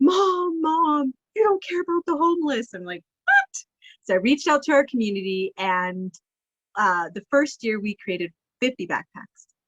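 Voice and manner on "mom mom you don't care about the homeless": mock tearful child voice, high, sobbing cry. A single mom retells her son waking at night, imitating Gabriel sobbing. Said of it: "like sobbing".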